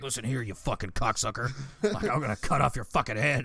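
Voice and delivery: threatening preacher voice. Acting out a pastor sending death threats: imitating a pastor. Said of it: "it's a pastor somewhere, and he's just like".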